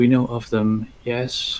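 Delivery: soft, hushed speech. A game master voices a rider who looks around, then answers in a hushed voice. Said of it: "in a hushed voice".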